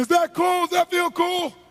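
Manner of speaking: imitated screaming yell. Retelling a scene, repeating own past words: retelling own screaming. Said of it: "I'd be screaming".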